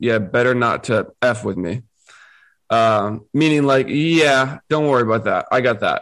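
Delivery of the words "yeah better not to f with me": mock flat, deadpan delivery. Retelling a woman's reply to a man asking if she can fight, deadpan. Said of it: "Tyra looks back at him like deadpan".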